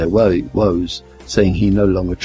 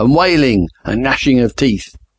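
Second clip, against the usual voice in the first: put-on thundering preacher voice, booming, much higher; 4 semitones higher than usual. Retelling a Sunday sermon on death and damnation, thundering like Pastor Jamie. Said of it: "he thundered".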